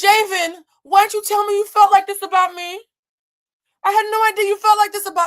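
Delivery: shrill, very high, very loud tearful sobbing wail. Retelling a reality show scene, imitating someone crying. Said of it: "She starts crying and says".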